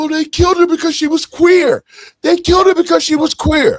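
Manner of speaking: acted tearful crying wail, pitched very high. Retelling what a wife said on the internet: imitating someone crying. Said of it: "on the internet crying, saying".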